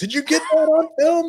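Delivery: loud, high excited shout.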